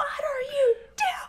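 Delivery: very high-pitched, drawn-out, stretched-out yell. Retelling watching players from the crowd: retelling a yell. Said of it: "you could just hear us yelling".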